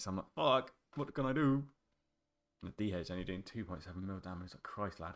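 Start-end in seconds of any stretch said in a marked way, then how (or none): 0.3-1.6 desperate, panicked voice, raised and drawn out. Reviewing a boss fight with one minute left: retelling own panic. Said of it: "shitting myself a little bit here".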